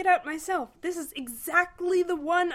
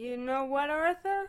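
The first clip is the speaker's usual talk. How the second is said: put-on sloppy, slurred drunk voice; 4 semitones lower, 5 dB quieter than usual. Narrator reading Ford's words to Arthur, in Ford's drunken slur. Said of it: "Ford slurred".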